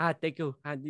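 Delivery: bright, eager, happy, high-pitched cheery voice. Imitating Mbappe thanking someone last year: high-pitched Mbappe impression. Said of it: "he has that, like, high-pitched, like, voice".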